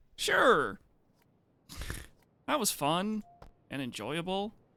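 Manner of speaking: dry, sarcastic delivery with swooping sing-song tune. Commenting on a round where the team keeps dying: sarcastic. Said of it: "he said. Sarcastically".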